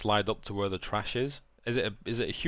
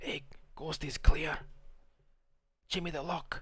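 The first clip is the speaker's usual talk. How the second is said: whispered, higher pitch; 7 semitones higher than usual. Playing a character who signals that the yard is clear: whispering in character. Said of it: "I whisper down and I say".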